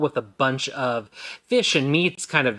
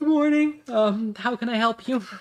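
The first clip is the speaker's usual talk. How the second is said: high-pitched, tired half-elf barmaid voice. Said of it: "nods and goes".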